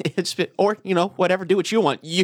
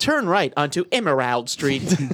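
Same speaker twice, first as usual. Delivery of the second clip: imitated navigation-device voice, mispronounced. Imitating a GPS that can't say a street name: imitating a GPS voice mispronouncing. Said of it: "'cause it can't say Emerald".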